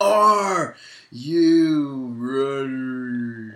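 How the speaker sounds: arena announcer call with long drawn-out you. Doing the wrestler's catchphrase after being asked to finish it: Triple H impression. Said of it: "you sound just like him".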